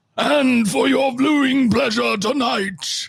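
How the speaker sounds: very high, grand arena announcer voice. Joking about announcing a fight between the others: Gladiator arena announcer voice. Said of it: "can I be the big, like, arena announcer?".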